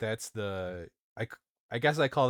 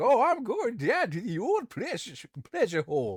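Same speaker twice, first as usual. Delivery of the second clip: put-on very high, sing-song, swooping old country farmer voice; 12 semitones higher, 3 dB louder than usual. Describing a scene like an old tv show, imitating an old farmer. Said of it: "Uh some old farmer is like".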